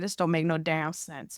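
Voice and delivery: hushed, low, sighing mutter under the breath. Retelling a line said in a checkout queue: muttering under breath with a sigh. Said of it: "under my breath, give a deep sigh and say".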